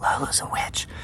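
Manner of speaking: very soft, breathy whisper under the breath. Telling of midnight at the chicken house, retelling a whisper. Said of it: "just as I whisper".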